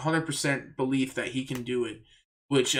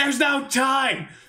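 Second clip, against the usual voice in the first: shrill, very high, loud screaming yell; 13 semitones higher, 6 dB louder than usual. Retelling a frantic untying under attack: imitating Zoro screaming. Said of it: "they're just screaming at each other".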